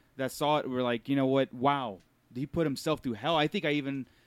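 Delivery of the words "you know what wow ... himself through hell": ordinary talk, nothing marked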